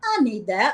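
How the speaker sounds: brash, cocky, swaggering voice. Retelling a reply heard through the box: imitating a cocky voice. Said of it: "this kind of cocky voice goes".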